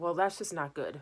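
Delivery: fed-up, very irritated, annoyed tone. Retelling the dad's reply about memory loss, imitating an irritated voice. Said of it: "a very irritated voice".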